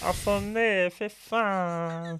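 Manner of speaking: very slow, from the throat. Showing how the voices sound, in a throaty Stitch-like voice. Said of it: "They sound way more like Stitch. It's all in the throat".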